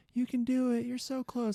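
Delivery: high-pitched, supportive, encouraging motherly cheering. Recounting faking a cramp near the race finish as people cheer, imitating encouraging mom voices. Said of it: "Like all these mom voices".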